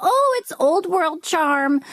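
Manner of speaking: put-on charmed voice, high and drawn-out. Quoting how homeowners excuse creaky floors, in a put-on mock charmed voice. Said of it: "I did the voice".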